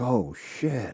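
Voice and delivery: frightened, terrified exclamation. Retelling how the kid filming the video reacted: imitating a terrified voice. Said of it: "you can hear it in his voice, like, he's terrified".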